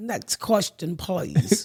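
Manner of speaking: put-on, fake British English accent. Answering a question about periods in a put-on British accent. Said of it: "Was that your British accent?".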